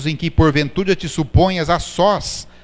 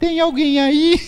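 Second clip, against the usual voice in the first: tiny, thin little voice, very high-pitched; 11 semitones higher than usual. Speaker retells a friend asking at the door, imitating a thin little voice. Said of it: "ela perguntava com voz fininha".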